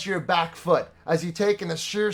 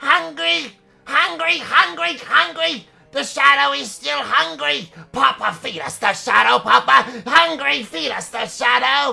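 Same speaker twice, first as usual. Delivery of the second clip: freakish, maniacal, high, rasping creature voice; 8 semitones higher, 5 dB louder than usual. A game master voicing a corrupted owl's second head, maniacal and freakish. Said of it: "A second head on this owl, fully corrupted and mutated from the shadow curse [name] has scattered across this land. Its second head dangles, almost lifeless, from the side of its torso, speaking in a".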